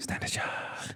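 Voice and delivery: soft, unvoiced, apologetic whisper.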